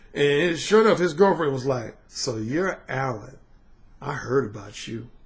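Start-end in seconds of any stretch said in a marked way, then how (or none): 2.1-5.1 slow, seductive, flirty ooh voice. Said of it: "she said it with a voice like, "Ooh."".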